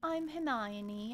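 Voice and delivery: breezy, light and airy voice. Contrasting a character's voice with Hermione's: airy Hermione voice. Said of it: "Hermione is very airy".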